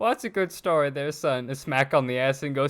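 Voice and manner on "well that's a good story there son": put-on grandma-like little old lady voice. Imagining what a little old lady says after the story: little old lady voice. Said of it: "a little old lady just being like".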